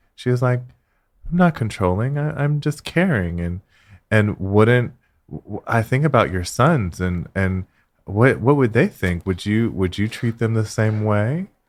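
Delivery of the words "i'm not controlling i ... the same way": soft, hushed, gentle and courteous voice. Speaker retelling an argument and quoting Cindy, mimicking Cindy's soft, polite voice. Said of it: "in a soft, polite voice".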